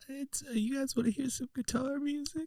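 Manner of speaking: very high voice that sounds far away. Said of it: "Why do you sound far away?".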